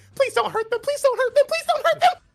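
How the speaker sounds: very high, terrified, frightened pleading tone. Voicing a character shielding a dog from a large behemoth: scared pleading in character. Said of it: "she's shivering 'cause he's very scared".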